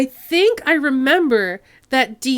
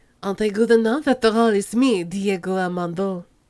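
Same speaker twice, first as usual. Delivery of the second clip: put-on French accent, much lower; 5 semitones lower, 4 dB quieter than usual. Voicing Diego Armando's lines, in a French accent. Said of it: "so he's staying French".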